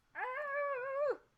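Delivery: overjoyed, very high, with a stretched-out "ah". Hunting for a die after a big roll: very excited. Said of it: "I'm so excited".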